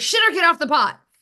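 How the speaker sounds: called out high-pitched and loud.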